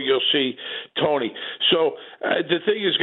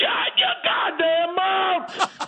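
high, slow furious shout. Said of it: "And Tony Sirico goes".

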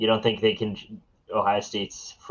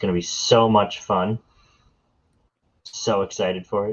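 heavily sarcastic tone. Talking with a co-host about an upcoming game, with heavy sarcasm. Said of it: "the heavy amount of sarcasm in my voice".

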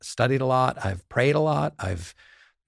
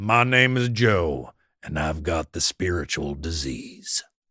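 thick, slow Southern drawl in a deep voice; 7 semitones lower than usual. Retelling an old man introducing himself at an AA meeting, imitating Joe's deep Southern accent. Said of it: "He had a deep, thick Southern accent".

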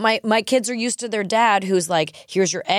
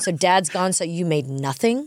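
acted disgusted tone; 3 semitones lower than usual. Retelling how he reacted to finding no food made for him, mock-disgusted. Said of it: "In the disgust".

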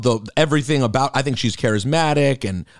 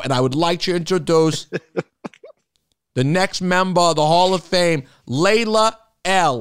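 put-on Boston accent, announcer style, pitched up; 5 semitones higher than usual. Introducing the next Hall of Fame member: Boston accent. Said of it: "I have a Boston accent now".

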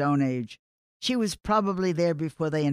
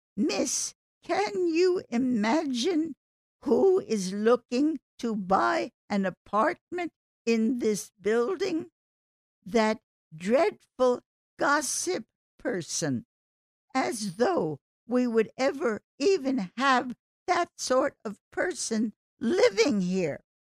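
put-on high, birdlike little old-lady voice; 8 semitones higher than usual. Retelling a building resident's snub to the rental agent; little high-pitched bird-like voice. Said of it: "she said in her little high-pitched bird-like voice".

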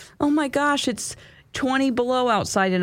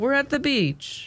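bad French accent, higher; 6 semitones higher than usual. Retelling what a French exchange student said at the beach: terrible French accent. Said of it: "that was a terrible French accent".

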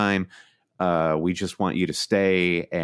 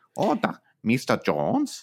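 put-on high, swooping German accent of an old-film villain; 5 semitones higher than usual. Showing the only German accent they can do, an Indiana Jones villain accent. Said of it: "the only German accent I could replicate would be like from an Indiana Jones film".

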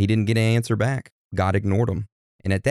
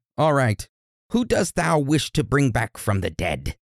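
high, theatrical put-on witch voice; 5 semitones higher than usual. Retelling the story of Saul, speaker voices the witch's reply: witch voice. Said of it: "I like your witch voice".

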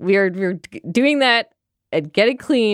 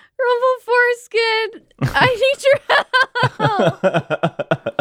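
very high, swooping, stretched-out shout; 13 semitones higher than usual. Calling out in the game to a companion for help: yelling. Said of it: "I'm just gonna start yelling".

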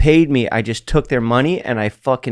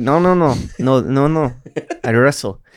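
put-on French accent. Retelling a man's reply to advice, imitating his French accent. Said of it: "with his French accent".

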